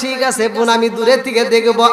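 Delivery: ordinary talk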